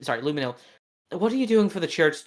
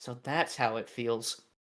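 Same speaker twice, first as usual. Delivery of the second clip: barely audible, low mutter under the breath; 5 semitones lower, 9 dB quieter than usual. A character, as a memory of an old conversation flashes, says this muttered under his breath. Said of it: "he says under his breath".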